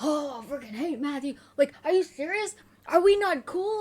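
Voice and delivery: huffing, puffing rant, loud and climbing in pitch. Retelling how he paced around and ranted: imitating huffing and puffing. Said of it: "huffing and puffing".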